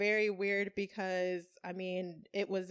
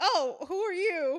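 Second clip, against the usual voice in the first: very high, loud, drawn-out fake scared cry; 10 semitones higher, 6 dB louder than usual. Retelling how dad acted at breakfast: imitating someone pretending to be scared. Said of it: "pretending to be scared and just being like".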